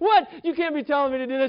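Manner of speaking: mock, fed-up, frustrated tone, very high-pitched. Telling a story, acting out a man told to paint the fence; retelling a frustrated protest. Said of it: "he gets all frustrated".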